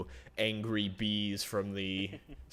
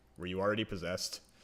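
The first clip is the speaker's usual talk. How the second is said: plain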